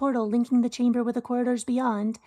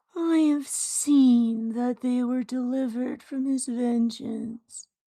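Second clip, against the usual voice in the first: sad, sorrowful character voice. Voicing a character in a shared story, now really sad: sad voice. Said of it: "no, he's really sad now".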